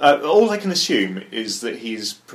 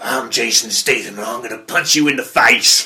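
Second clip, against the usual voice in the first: put-on loud, poor American accent; 5 dB louder than usual. Joking that an actor can't do an American accent: Jason Statham impression. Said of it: "can't do an American accent".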